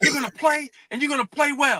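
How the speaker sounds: furious, very high-pitched angry coach voice. Retelling a locker-room moment, the speaker imitates his angry coach. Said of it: "throws it against the locker".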